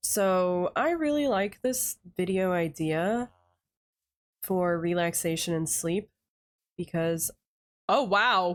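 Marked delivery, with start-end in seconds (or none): 7.9-8.6 sudden excited exclamation breaking calm. Exploring a village in a relaxation video, suddenly surprised: excited outburst, not calm.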